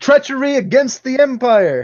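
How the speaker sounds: shrill, very high, very loud yell. Playing a character preparing for battle, in-character yell. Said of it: "I'm gonna yell".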